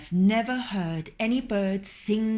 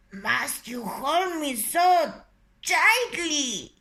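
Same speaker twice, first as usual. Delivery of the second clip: breathless, rasping wheeze, slow and high-pitched; 5 semitones higher than usual. Reading a story aloud, a rooster held tight in a fox's jaws: wheezing. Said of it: "he wheezed".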